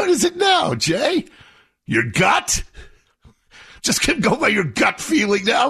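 shouting angrily.

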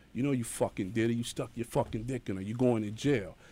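usual speaking voice

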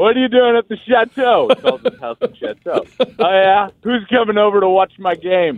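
loud speech, not yelling. Retelling how he spoke to her in front of everyone, a loud conversation. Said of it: "like have a loud conversation".

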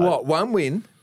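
put-on sarcastic tone. Retelling what a coach answered when asked about next year: imitating a sarcastic reply.

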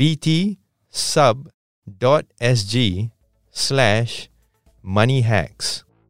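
slow, unhurried, deliberate reading. Podcast host giving listeners a website address, saying a URL slowly. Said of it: "I'm going to say this URL quite slowly".

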